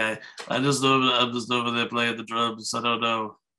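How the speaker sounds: bad, nasally, flat, low-ish, mumbled put-on voice.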